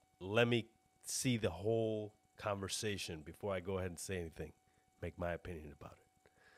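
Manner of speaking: normal talking voice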